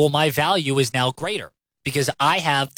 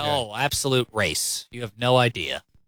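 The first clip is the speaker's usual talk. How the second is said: dry sarcasm, lower pitch; 4 semitones lower, 4 dB quieter than usual. Radio host answering a rhetorical question, sarcastic. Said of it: "he said sarcastically".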